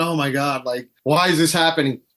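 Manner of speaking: put-on tearful voice. Retelling watching sad videos online: imitating own tearful voice. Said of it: "I'm over here tearing up and I'm going".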